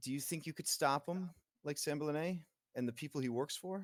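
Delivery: anxious, jittery, nervous woman's voice. Narrating a woman who lets out a long nervous breath before asking, nervous NPC voice. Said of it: "lets loose like a very nervous kind of long breath".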